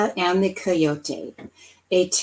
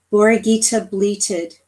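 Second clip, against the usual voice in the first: ordinary delivery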